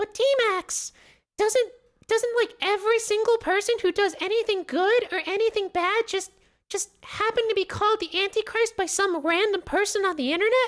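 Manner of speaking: shrill, very high, little squeaky voice. Voicing a chat viewer's question back at them, in a squeaky voice. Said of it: "random squeaky voice person in my chat".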